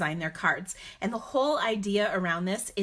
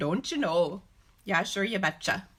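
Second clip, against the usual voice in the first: Upper Midwest Minnesota accent. Greeting a viewer from Minnesota, speaker slips into a Minnesotan accent. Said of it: "my Minnesotan accent".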